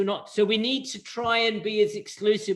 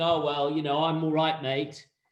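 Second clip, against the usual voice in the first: mock smug tone, lower; 5 semitones lower than usual. Imitating someone in business who feels safe from change: imitating a smug tone. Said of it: "someone's sitting there smugly saying".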